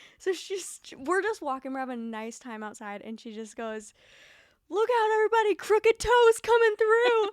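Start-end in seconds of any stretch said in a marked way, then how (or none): 4.7-7.3 shrill, very high, full-volume yell. Retelling a walk when Kinsley suddenly called out, retelling Kinsley's yell. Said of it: "And like yelled it".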